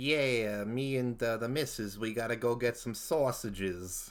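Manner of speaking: New York accent drifting toward Montreal Italian. Coaching someone on accents, trying a New York accent that comes out Montreal Italian. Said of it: "It's a little bit too Montreal Italian".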